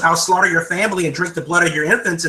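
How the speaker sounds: normal talking voice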